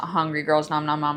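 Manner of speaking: ordinary talk, nothing marked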